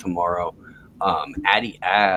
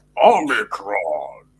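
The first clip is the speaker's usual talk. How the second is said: slow, loud robot voice. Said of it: "we've been doing Transformer voice".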